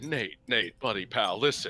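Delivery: soft, hushed stage whisper. Pretending to push through a crowd and speak into someone's ear: mock half-whisper. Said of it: "I'm just gonna whisper in Nate's ear".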